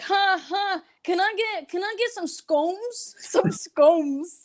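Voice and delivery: very slow and high, stretched out. Complaining about someone who came back from El Paso talking weird, imitating her weird El Paso talk. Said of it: "she talks like this".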